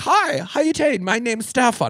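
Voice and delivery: put-on high-pitched, slow German accent. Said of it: "Oh, they had that accent?".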